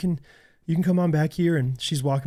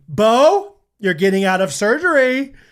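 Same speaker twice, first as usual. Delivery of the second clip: mimicked scream, higher pitched and louder; 5 semitones higher, 7 dB louder than usual. Retelling a nurse waking a patient after surgery: imitating a nurse screaming.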